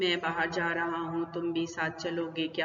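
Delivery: low, flat, machine-like computer voice with no tune. Showing how a monotonous, computer-like language sounds: flat robotic monotone. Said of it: "इस तरह का computer language होती है".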